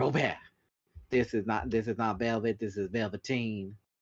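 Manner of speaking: put-on Southern gentleman voice and accent. Retelling a cartoon scene: imitating a southern gentleman. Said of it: "Southern gentleman be like".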